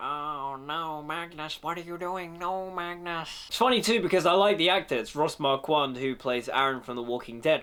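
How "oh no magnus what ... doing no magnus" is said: soft, slow, silly, goofy nerd voice. Speaker mocks how a character talks: nerdy Professor X voice. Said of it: "the way he talks, it's like".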